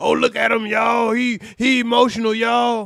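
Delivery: mock jeer, loud and slow, taunting. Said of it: "I gotta get in the deep voice".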